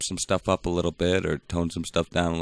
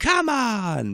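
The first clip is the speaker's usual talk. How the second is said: sudden yelled outburst at a very high pitch. Imitating a comedian who yells a lot: Billy Eichner impression. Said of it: "that was my Billy Eichner impression".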